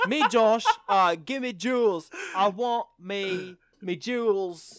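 put-on British-accented broken English. Playing along in the bit, in broken english with a british accent. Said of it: "try to do some broken English in a British accent".

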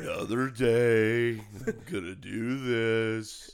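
slow, glum, depressed drawl, word "day" stretched out. Playing the weatherman's gloomy co-host in a joke: Eeyore voice. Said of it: "And then Eeyore".

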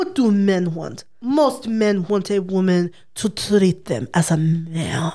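slow put-on Eastern European accent with "man" drawn out. Reading out a quote for the others, trying an eastern european accent. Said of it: "Can I try and do this in an Eastern European accent?".

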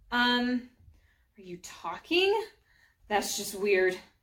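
ordinary delivery, nothing marked

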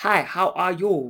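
put-on very slow, drawn-out Chinese accent. Telling a listener about a woman who developed an accent after a stroke, Chinese accent. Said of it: "she develops a Chinese accent".

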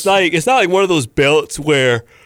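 speech stretched by a yawn. In a conversation with others, yawning while talking. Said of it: "I was yawning".

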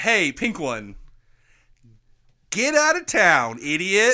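loud put-on cartoon hedgehog voice. Playing the hedgehog and taunting the pink one, in a cartoon hedgehog voice. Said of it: "I want to be the voice".

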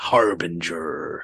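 hammy, deep, bad evil-villain voice. Playing along with a cartoon sketch, in a bad evil voice. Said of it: "say it in a bad, like, evil way".

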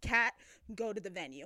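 plain

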